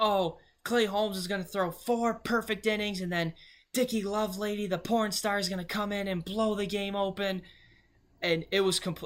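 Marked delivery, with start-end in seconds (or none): 0.0-7.4 screamed, yelled-out ranting tirade. Retelling a stranger's sudden rant at the speaker: imitating someone screaming. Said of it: "starts screaming, and was just like".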